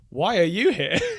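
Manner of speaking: rough, broken, non-native English. Retelling how a waitress greeted him and a companion, imitating her broken english. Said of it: "in sort of broken English".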